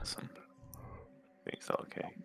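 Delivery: very soft, low whisper.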